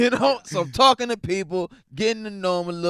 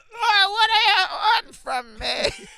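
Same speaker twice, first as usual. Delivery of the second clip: put-on drawn-out, slow, shrill, very high old man yell. Retelling how an old man slowly rushed the stage: imitating an old man screaming. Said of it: "because it was so slow".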